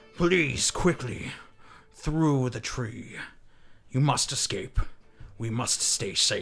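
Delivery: resounding, booming voice ringing out with echo. Narrating a game round as a voice urges the players to escape, low booming echoing voice. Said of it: "that low, booming voice kind of echo out".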